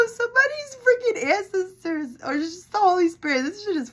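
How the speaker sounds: talking through laughter. Giving a reading and cracking up: laughing while talking. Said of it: "I'm sorry for laughing like this".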